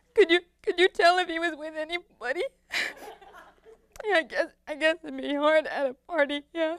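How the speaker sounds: acted tearful delivery. Acting out their past self on the phone to Maria, crying. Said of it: "Two weeks go by, I walk up and down the hall, crying, smoking cigarette after cigarette, cradling a bottle of bourbon like it's a teddy bear. Sometimes a phone would ring".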